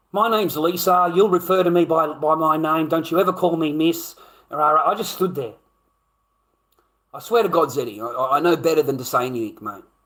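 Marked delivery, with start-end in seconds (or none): none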